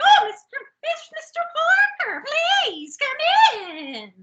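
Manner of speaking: mock, very high-pitched, overexcited, thrilled gush. Retelling a show scene where a shop owner greets a visitor: imitating excited Missus Garrett. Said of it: "She's so excited".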